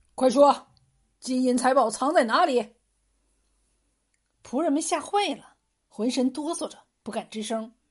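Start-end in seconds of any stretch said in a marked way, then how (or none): 0.2-2.7 loud, barked, shouted delivery. A robber leader interrogates the bound servants, shouting a question. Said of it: "为首的一个向仆人们喝问".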